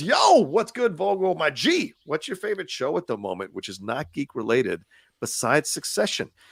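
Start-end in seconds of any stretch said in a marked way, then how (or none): none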